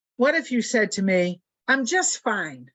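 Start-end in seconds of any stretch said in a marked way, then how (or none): 1.7-2.5 tense, anxious voice with slightly harsh edge. Contrasting two replies to an open question, anxious, slightly harsh. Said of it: "Listen to the tone of voice, the the the anxiety, or the the there's a little harshness in there".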